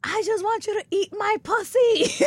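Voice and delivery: full-lunged, frustrated screaming, pitched very high. Retelling a frustrated outburst at a partner: imitating own past screaming. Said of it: "I would be screaming this at the top of my lungs".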